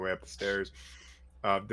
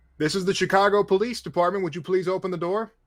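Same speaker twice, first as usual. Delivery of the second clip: very high, loud, official police-style announcement voice; 10 semitones higher, 8 dB louder than usual. Voicing a cop knocking on an apartment door: mock police announcement. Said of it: "police knock, like".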